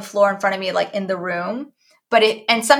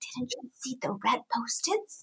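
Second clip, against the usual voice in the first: mock whisper, quieter; 2 semitones higher, 14 dB quieter than usual. Retelling what was said to a child who walked in: imitating own whisper. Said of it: "did you see my whisper?".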